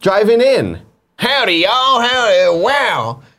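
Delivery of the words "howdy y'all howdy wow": very high, slow, drawn-out character voice. Retelling the cars driving in: Mater voice. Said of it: "in comes Mater".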